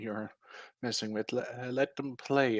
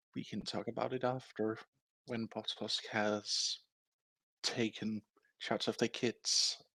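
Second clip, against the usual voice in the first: quiet, hushed, close whisper; 8 dB quieter than usual. Narrating a priestess who pulls the listener close to speak: whispering. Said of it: "pulls you really close and whispers to you".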